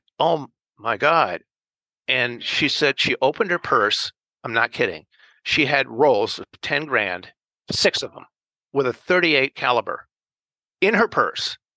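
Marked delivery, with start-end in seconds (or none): 0.2-1.4 sudden, scared, startled exclamation. Retelling his own reaction to the client's warning: imitating his own scared reaction. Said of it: "when you get really scared".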